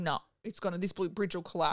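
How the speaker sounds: ordinary talk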